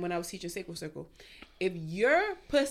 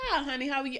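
put-on welcoming, sweet, nurturing Southern Carolina accent; 7 semitones higher than usual. Voicing an imagined welcoming character in a sweet Southern accent. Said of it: "they pussy like".

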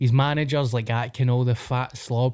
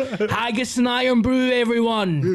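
very high-pitched wrestling announcer-style voice; 11 semitones higher than usual. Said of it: "He does it in Florida".

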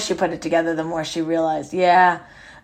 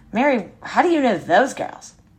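put-on scornful, disdainful, pitched-up contemptuous tone; 5 semitones higher than usual. Retelling what a visitor asked about a photo on the desk: imitating a contemptuous tone. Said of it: "she said it with such contempt".

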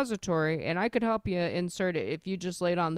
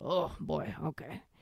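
put-on old nurse-like voice with a smoker's rasp; 7 dB quieter than usual. Retelling what an old nurse said in the emergency room: imitating nurse's smoker's voice. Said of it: "she's just got, like, a smoker's voice".

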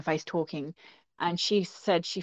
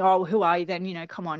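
mock scoffing and laughing, put-on. Retelling an aggressive man's reply, imitating a man scoffing and laughing. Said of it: "he's scoffing and he's in his, in her face laughing".

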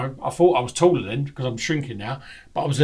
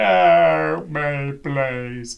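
tearful crying, the word "help" drawn out; 3 dB louder than usual. Retelling their own past words at the festival while crying: retelling their own crying. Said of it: "And I'm fucking crying".

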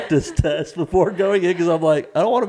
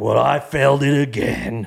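put-on huffing and puffing man voice, lower; 3 semitones lower than usual. Retelling what a man who failed the test said: imitating huffing and puffing. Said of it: "huffing and puffing".

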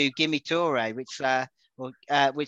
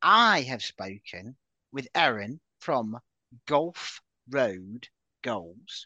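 drawn out, very slow, deliberate delivery; 3 semitones lower than usual. Introducing a chat with a guest about a weekend fixture, very slow. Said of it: "which I'm going to say very slowly".

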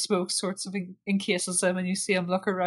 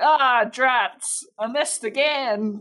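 put-on very slow, botched, failed cowboy accent; 5 semitones higher, 5 dB louder than usual. Voicing her reaction to missing again, in a failed cowboy accent. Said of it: "That was not the cowboy accent I was trying to do".

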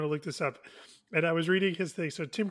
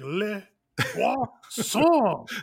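put-on French chef accent, higher and louder; 3 semitones higher, 5 dB louder than usual. Asking whether characters use French accents, imitating the Little Mermaid chef. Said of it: "Like the chef in Little Mermaid, he's not going like".

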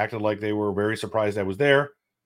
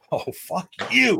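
mock, very high, rough, furious angry outburst; 10 semitones higher than usual. Retelling being told the deli was out of fried chicken: retelling an angry outburst. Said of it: "I was so mad".

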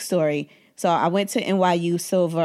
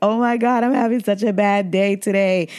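put-on weepy, tearful crying voice; 4 semitones higher, 4 dB louder than usual. Retelling a call to a therapist from under a desk: imitating own past crying.

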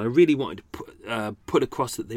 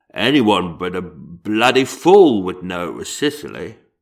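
slow, booming, deliberate statesman-like voice; 3 semitones lower, 6 dB louder than usual. Recalling a line from a Rainbow episode: Winston Churchill impression. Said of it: "this is my impression of George from Rainbow, aka Winston Churchill".

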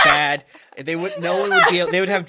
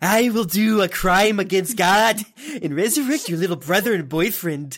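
acted anime villain character voice; 3 semitones higher than usual. Asked by another speaker to read a line in the Orochimaru voice. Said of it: "can i request that you do the orochimaru voice and read this".

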